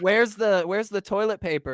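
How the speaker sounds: mock yelling. Acting out, for a friend, a made-up scene of a guest calling out from a bathroom, imitating someone yelling. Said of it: "And Crafty yells".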